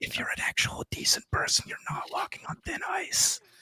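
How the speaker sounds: soft, unvoiced whisper. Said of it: "I'm whispering too much this episode".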